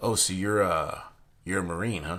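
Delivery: ordinary talk, nothing marked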